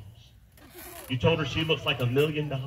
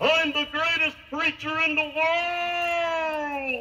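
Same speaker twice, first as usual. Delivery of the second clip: high, slow, drawn-out boastful yell. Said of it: "So he said, "Okay, I'm gonna try it again".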